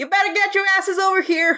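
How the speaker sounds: very high shout. Voicing a bandit calling to others up top: yelling up to others. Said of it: "they kinda yell to up top".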